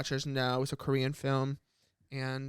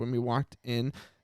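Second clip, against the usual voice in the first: ordinary delivery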